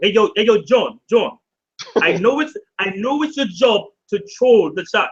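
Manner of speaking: British accent slipped into briefly, put-on. Speaking to John with his British accent: British accent. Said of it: "with my British accent real quick".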